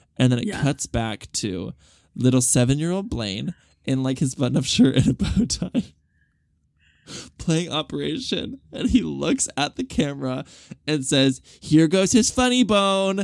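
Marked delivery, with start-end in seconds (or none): 11.6-13.2 high-pitched TV announcer voice. Retelling a seven-year-old speaking to the camera, like a TV show announcer. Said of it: "Like very as if he's like an announcer on a TV show".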